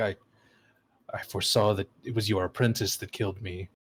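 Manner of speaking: through clenched teeth. Speaker voicing a character who answers through gritted teeth. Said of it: "like through gritted teeth".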